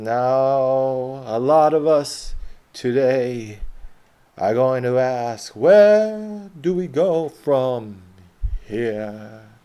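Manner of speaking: booming, loud, very slow oration, "now" drawn out. Explaining what makes great speeches, the speaker quotes MLK in his slow cadence. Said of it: "MLK speaks slower than anyone else".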